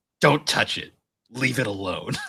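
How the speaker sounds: put-on fed-up, done-with-it voice. Retelling a scene where Kagome refuses help: imitating Kagome's "I'm done with you" voice. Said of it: "That "I'm done with you" voice".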